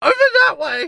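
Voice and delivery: very high, very loud, straining goblin yelp. Voicing a struggling captured goblin pointing to its hideout: struggling goblin voice. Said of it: "he struggles and is like".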